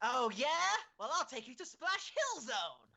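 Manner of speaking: very high video game hero voice. Bantering with another speaker: Sonic voice. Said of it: "losing the Sonic voice midway through".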